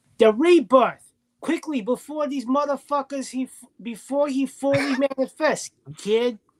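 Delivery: put-on high-pitched, slow Boston accent. Urged to go ahead and do it, perform the line in the Kayla voice. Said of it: "the Caleb voice. Go ahead".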